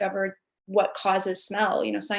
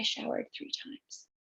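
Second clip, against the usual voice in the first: bad put-on voice, whispered, barely audible; 10 dB quieter than usual. Retelling the husband's reply about showering: terrible quiet impression of husband. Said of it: "It's a terrible impression".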